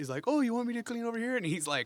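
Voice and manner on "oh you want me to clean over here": very high, put-on cleaning lady voice. Retelling a scene from the series: imitating a cleaning lady accent. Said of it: "she does, like, a cleaning lady accent".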